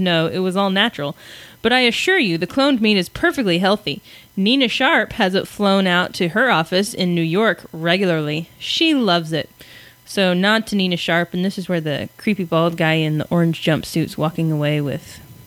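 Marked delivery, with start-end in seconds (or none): none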